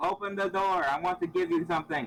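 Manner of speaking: loud, high-pitched yell. Player character at a closed door, calling to someone crying inside, yelling. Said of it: "I yelled".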